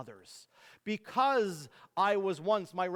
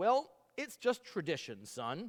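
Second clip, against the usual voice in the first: ordinary talk, nothing marked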